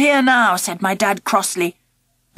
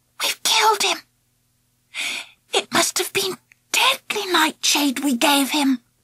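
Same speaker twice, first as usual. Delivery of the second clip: rough, hoarse, high whisper; 5 semitones higher, 4 dB quieter than usual. Kneeling by a man on the ground, she looks up at the narrator: hoarse whisper. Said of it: "she whispered hoarsely".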